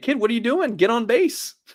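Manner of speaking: very high-pitched yelling. Acting out a parent at a kid's baseball game: imitating someone yelling at a kid. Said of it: "I'm just gonna yell at the kid".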